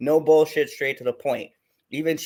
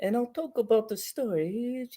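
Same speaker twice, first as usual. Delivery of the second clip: calm British voice, higher and quieter; 7 semitones higher, 6 dB quieter than usual. Imitating a reviewer describing his video: Mister H Reviews calm British voice. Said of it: "he's British, so he's very, like, calm".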